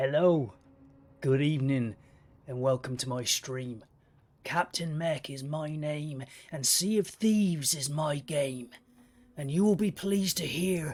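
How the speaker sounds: fake pirate-captain voice, put-on pirate accent. A streamer welcomes viewers at the start of a sea of thieves stream, put-on pirate accent. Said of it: "I shan't be sticking with this accent".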